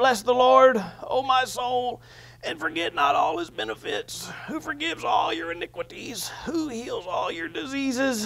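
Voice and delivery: faint whisper with no voice, breaking off. Retelling a recording of him reading a psalm without a voice: imitating a whisper. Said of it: "And he's talking like this".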